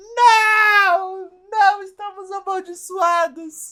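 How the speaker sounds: acted-out drawn-out despairing wail, very high, very loud. Acting out schoolchildren reacting as the story begins: mock despair. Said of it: "as crianças começaram a ficar em desespero".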